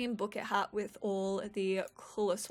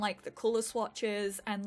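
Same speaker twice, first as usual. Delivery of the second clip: ordinary talk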